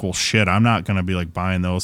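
plain

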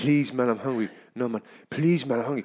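mock begging, imitated pleading voice. Retelling how a man asking for a dollar kept begging: imitating someone pleading. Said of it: "He's like".

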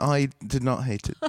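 put-on British-accented delivery. Hosts do British accents while talking about a movie; in a British accent. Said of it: "that's a good accent".

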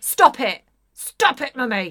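loud fury through gritted teeth. Showing the sound of Ramona's anger, imitating Ramona's clenched-teeth anger. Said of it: "said through clenched teeth".

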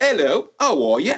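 playful put-on British accent. Retelling answering the phone as a kid: put-on british accent. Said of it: "I used to do a British accent".

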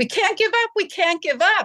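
mock desperate, frantic screaming, very high. Retelling the dentist screaming while performing CPR on her, imitating frantic screaming. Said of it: "He was screaming".

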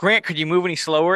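dry, mocking, sarcastic teasing tone. Retelling a man teasing another man on crutches, mimicking sarcastic teasing. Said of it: "Johnny's being his sarcastic self and goes".

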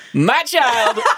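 playful cheery delivery. Asked to redo the line as a fun one after a sad take, fun upbeat reading. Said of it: "Now do a fun one".

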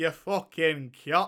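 Yorkshire dialect. Showing the others how to say the word in a proper yorkshire accent. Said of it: "say it with like a proper Yorkshire".

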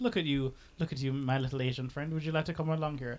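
joking, teasing tone. Speaker retells inviting a friend along: retelling a joking invitation.

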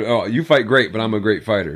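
plain

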